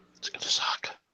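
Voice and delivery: hushed voice. Commenting on a movie while others talk: whispering. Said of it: "What are you whispering?".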